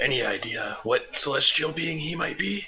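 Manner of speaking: hushed, soft half-whisper. Asking the group about a celestial being, half-whispering. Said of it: "Or I guess I'm whispering now".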